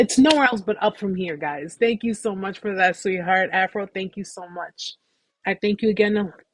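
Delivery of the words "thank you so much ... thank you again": voice welling up, emotional and near-tearful. Thanking the audience for their love and support: getting emotional. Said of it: "I'm getting emotional, guys".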